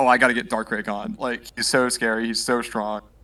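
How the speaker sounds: ordinary talk, nothing marked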